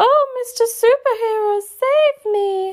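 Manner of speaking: very high, very slow, helpless damsel lisp. A woman mocks a movie's damsel in distress, in a lisping damsel-in-distress voice. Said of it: "she lisped".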